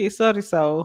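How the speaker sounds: ordinary talk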